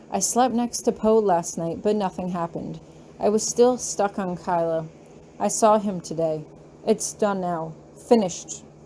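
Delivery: plain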